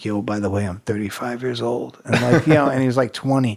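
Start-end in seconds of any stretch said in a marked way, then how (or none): 0.0-2.0 hushed, still-voiced stage whisper. Retelling half-whispering into someone's ear at a club: imitating a half-whisper. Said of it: "I whisper in his ear".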